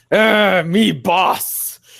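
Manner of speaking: shrill, very high bugbear voice, stretched "me". Wearing a bugbear mask among goblins, the speaker talks in a bugbear voice. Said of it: "pretend to be the bugbear".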